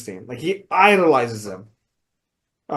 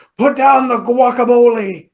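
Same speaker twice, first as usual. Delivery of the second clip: high, slow, drawn-out put-on drawl. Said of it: "Something about".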